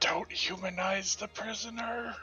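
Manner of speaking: put-on whisper. Leaning over to another character, whispering in character. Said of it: "Just gonna whisper".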